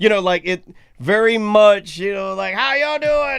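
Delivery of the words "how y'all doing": put-on high Southern Virginia drawl. Imitating a man who sounds exactly like the speaker's dad: Southern Virginia accent. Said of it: "the Southern, that Virginia".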